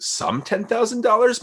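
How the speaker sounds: slow, high disbelief.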